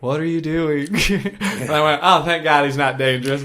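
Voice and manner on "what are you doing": mock broken-hearted, sad, mopey voice. Retelling a man who pulled up next to a woman, imitating a sad man. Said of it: "just a sad dude".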